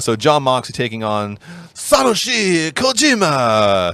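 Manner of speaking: very high, shrill, swooping, terrible put-on Japanese accent. Speaker introducing a wrestling match to a co-host; terrible Japanese accent. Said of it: "terrible Japanese accent".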